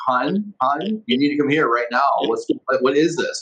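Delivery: mock urgent, alarmed emergency voice. Retelling his wife calling him from the garage: imitating an alarmed, urgent voice. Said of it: "almost emergency, something majorly is wrong type voice".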